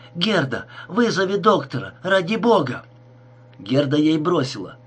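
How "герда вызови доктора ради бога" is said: frightened, startled exclamation. Narrator reads Stella calling to Gerda, exclaiming in fright. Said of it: "испуганно воскликнула Стелла".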